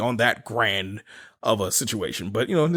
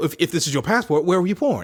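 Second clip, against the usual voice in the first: fake, bad put-on French accent, pitched up; 5 semitones higher than usual. Telling a story about an encounter with a border officer, acting out the officer's speech in a bad French accent. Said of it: "if it's not a good French accent".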